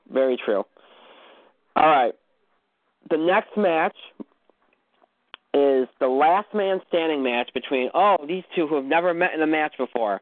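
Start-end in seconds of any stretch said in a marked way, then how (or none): 8.3-10.2 obviously sarcastic, openly ironic delivery. Introducing the next match, a last man standing match: sarcastic tone. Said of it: "I'm being sarcastic".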